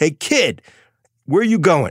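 mock loud shout. Retelling how a trader stood up and called to a new young guy: imitating Donnie Green shouting. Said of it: "Donnie Green stood up and shouted".

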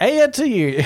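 playful sing-song.

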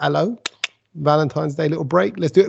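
normal talking voice

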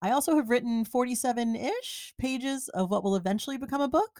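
pitch rises at the end on book. Listing what she did this year, questioning rise at the end. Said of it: "she says with a question in her voice".

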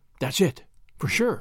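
awe-stricken, amazed, wonder-struck tone. A narrator reads a character's reply to his companion: awe-stricken voice. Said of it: "Julius replied in an awe-stricken voice".

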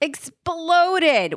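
loud explosive burst on exploded, like a blast. Asked to repeat the word from a story, saying an explosive 'exploded'. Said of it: "I have to say it like that because it's like the roof comes off the house".

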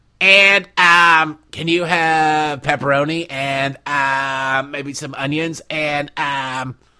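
put-on high-pitched, stoned-sounding Valley girl voice. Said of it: "sounds like a stoned Valley girl trying to order a pizza".

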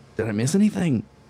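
drowsy, groggy, half-awake voice. A narrator voices a character just jolted awake asking the group, groggy.

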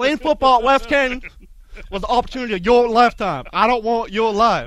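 very loud, very high put-on Texas drawl. Quoting a line from a football movie in a put-on Texas accent. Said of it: "That was my Texas accent".

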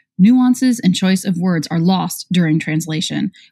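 plain

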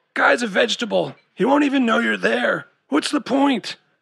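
hoarse rasping voice. Chad refuses to go visit Danny with Amber and Kyle, raspy voice. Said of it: "he said in a raspy voice".

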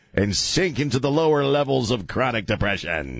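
ordinary talk

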